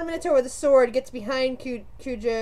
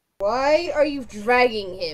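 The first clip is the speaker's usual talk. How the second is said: very deep, menacing, threatening guard voice. A guard questions the player dragging an unconscious man, in a deep, menacing voice. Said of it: "asks in a very deep and menacing voice".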